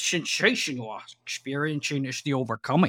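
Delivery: attempted, unconvincing Scottish accent. Retrying a Highlander line as Sean Connery, doing a Sean Connery Scottish impression. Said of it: "He's Scottish".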